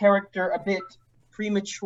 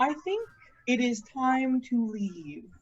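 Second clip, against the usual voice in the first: polite, deferential, courteous, soft and very respectful; 4 semitones higher, 5 dB quieter than usual. Speaking in character after walking up to someone, in a very respectful voice. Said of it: "I say in a very respectful voice".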